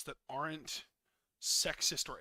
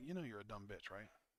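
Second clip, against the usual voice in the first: relaxed, offhand, laid-back casual delivery; 6 semitones lower, 11 dB quieter than usual. Trying different versions of one line: laid-back delivery. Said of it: "a really laid back version".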